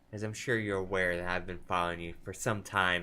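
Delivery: normal talking voice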